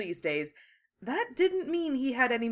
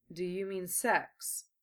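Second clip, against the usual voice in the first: suspicious, quieter tone; 3 semitones lower, 6 dB quieter than usual. Narrator reads a younger brother questioning his older brother, suspicious. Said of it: "Gaara asked suspiciously".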